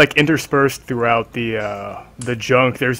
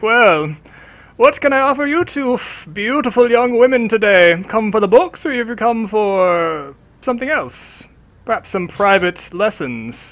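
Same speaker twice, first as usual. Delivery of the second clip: put-on high-pitched, querulous elderly man's voice; 9 semitones higher than usual. Retelling what a man said to two young women; imitating querulous old man. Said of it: "you hear a querulous old man's voice".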